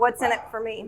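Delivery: normal talking voice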